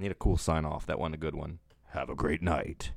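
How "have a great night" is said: put-on dramatic big-screen movie-style voice. Signing off to the audience a second time, in a movie voice. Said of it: "that's my movie voice".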